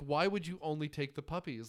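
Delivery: plain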